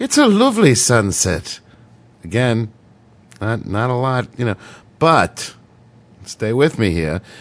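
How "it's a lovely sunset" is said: put-on sing-song Irish lilt, pitched up. Demonstrating an Irish phrase to listeners: Irish accent. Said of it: "so even with the accent".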